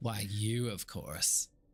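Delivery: piercing cackling laughter while speaking. Describing a voice speaking in someone's head, cackling voice. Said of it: "like this cackling in your head".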